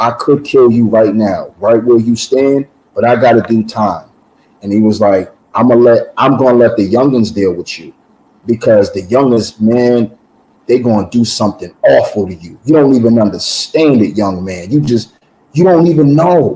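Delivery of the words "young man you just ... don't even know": ordinary talk, nothing marked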